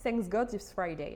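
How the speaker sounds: put-on, super strong English accent. A French speaker explains what TGIF stands for, in an English accent. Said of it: "vous allez voir mon super accent, accent anglais".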